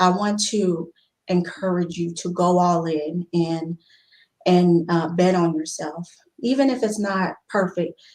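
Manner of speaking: deliberately deepened voice. Speaker encouraging listeners, speaking from the heart, in a deliberately deep voice. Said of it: "Let me go into the deep voice".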